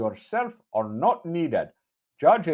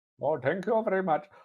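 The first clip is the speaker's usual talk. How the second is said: soft, exaggerated mock Indian accent; 5 dB quieter than usual. Asked to try a racist Indian accent, the speaker does one: racist Indian accent. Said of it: "racist Indian accent?".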